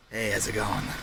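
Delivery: spooky, unsettling, scary, eerie voice. Introducing a character, Victor Oswald, in a roleplay: Victor Oswald scary voice. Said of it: "Your voice is scary".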